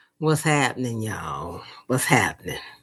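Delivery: laid-back, relaxed sultry voice. Greeting the others on arrival: laid-back sultry greeting. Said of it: "came in all laid back with the sultry".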